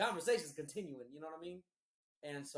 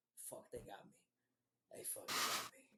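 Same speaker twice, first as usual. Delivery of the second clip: soft, low, drowsy half-asleep whisper. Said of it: "I just kept whispering".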